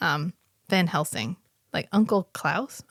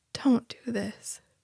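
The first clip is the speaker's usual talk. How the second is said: mock small, mournful, plaintive pleading voice; 4 semitones higher, 3 dB quieter than usual. Retelling a trapped vampire's line: imitating a sad plaintive plea. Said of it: "the saddest, most plaintive little "don't do this."".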